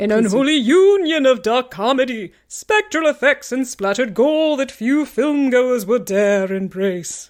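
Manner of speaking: put-on, scary, spooky storyteller voice. Reading a passage aloud in a scary Halloween voice. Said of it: "I'm going to read it in my scary Halloween voice".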